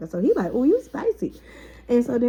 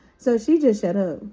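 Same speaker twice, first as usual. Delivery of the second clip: normal talking voice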